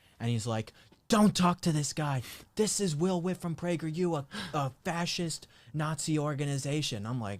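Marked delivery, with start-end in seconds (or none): 1.1-7.1 high-pitched screamed outburst. Retelling how a protester confronted the interviewee: imitating someone screaming. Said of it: "then he just starts screaming at the person".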